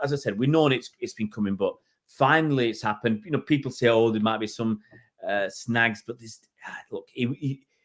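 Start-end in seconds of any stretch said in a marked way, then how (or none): none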